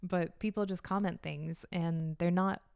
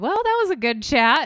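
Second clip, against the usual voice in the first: loud, high shout straight into the microphone; 6 semitones higher, 14 dB louder than usual. Saying what they were going to say: shouting into the mic. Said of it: "I just shouted into the mic".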